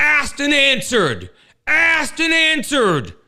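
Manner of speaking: very high, loud, swooping, deliberate, drawn-out outburst. Retelling a call, imitating Matt Damon as Judge Kavanaugh. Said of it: "the Matt Damon version of Judge Kavanaugh".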